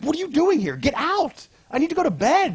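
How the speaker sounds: very high, swooping, up-and-down yell. Retelling a comic scene, a boy finding an intruder in his room: imitating John yelling. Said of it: "John starts yelling".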